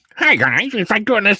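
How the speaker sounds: goofy put-on voice. Complaining about how Dave Sim talks: Dave Sim goofy voice. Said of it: "Dave Sim's talking like this. ... this goofy voice".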